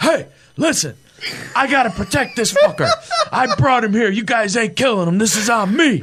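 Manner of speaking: mock bellow, high and swooping, at top of lungs. Retelling a friend protecting a guy on a sidewalk: imitating someone yelling at the top of lungs. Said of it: "at the top of his lungs on a South Buffalo sidewalk".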